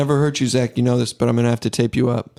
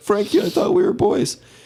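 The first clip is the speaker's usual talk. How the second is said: mock, very high, tearful, freaked-out crying voice; 9 semitones higher than usual. Retelling a film scene where Zach freaks out: imitating Zach crying. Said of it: "freaking out, crying".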